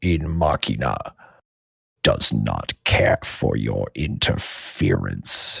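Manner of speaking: booming grating voice. Voicing the Core speaking to Robbie: booming, grating voice. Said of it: "this booming, grating voice".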